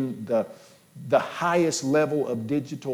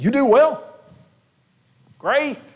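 mock sarcasm, higher and louder; 12 semitones higher, 8 dB louder than usual. Quoting James questioning belief in God: imitating sarcastic tone. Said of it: "He's saying it sarcastically".

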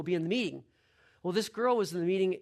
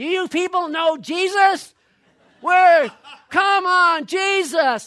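booming, very loud, very high, shrill, very slow yelling; 12 semitones higher, 13 dB louder than usual. Retelling how a camper in a store was yelling: imitating someone yelling. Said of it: "he starts yelling".

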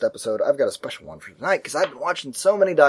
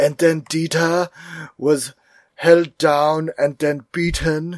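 put-on German-accented voice, pitched up; 3 semitones higher, 3 dB louder than usual. Describing a Herzog documentary's voiceover, Herzog narrator impression. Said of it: "He has that certain tenor to his German".

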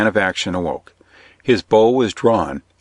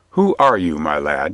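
polite, much lower and slower; 4 semitones lower than usual. Speaking to a page who met his glance unafraid, ask who he is more civilly. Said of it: "Robin said more civilly".

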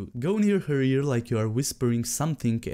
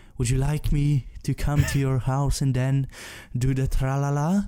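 put-on, mock sexy, seductive voice. Mocking an example of a guy using his sexy voice, imitating it. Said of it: "that's his sexy voice".

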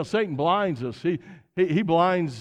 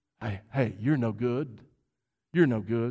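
low, hushed half-whisper, right in the ear; 6 semitones lower, 5 dB quieter than usual. Acting out the devil half-whispering accusations in a listener's ear: the devil half-whispering. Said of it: "he whispers in your ear".

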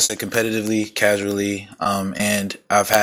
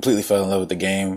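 ordinary talk, nothing marked

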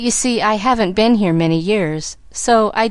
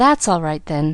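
said with a sigh; 4 semitones lower than usual. Pollyanna, told the man on the ground is only resting, answers him sighing. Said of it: "sighed Pollyanna".

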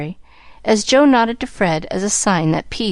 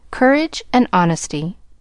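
ordinary delivery, nothing marked

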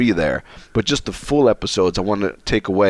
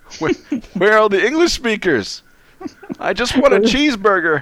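fake tearful sobbing, very high pitch; 12 semitones higher than usual. Acting out standing lost in the middle of the street: mock crying. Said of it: "That'll just be me standing in the middle of the street just crying".

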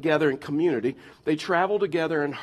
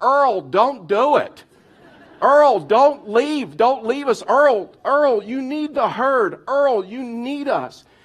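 many voices screaming, high, loud and pleading; 8 semitones higher, 6 dB louder than usual. Speaker acts out a wildebeest herd calling to one leaving: imitating a herd screaming. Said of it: "the other herd starts screaming at him like".

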